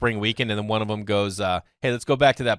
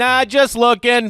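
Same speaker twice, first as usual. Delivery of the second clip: acted, very high, loud, cheeky voice; 13 semitones higher, 7 dB louder than usual. Retelling the reply in a dugout bit: imitating own trash talk. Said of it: "one of the greatest trash talkers".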